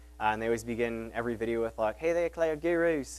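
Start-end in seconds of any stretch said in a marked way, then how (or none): 2.0-3.2 bad put-on Australian accent, pitched up. Imitating the video greeting of A Cloud Guru, A Cloud Guru Australian accent. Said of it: "which is my terrible Australian accent".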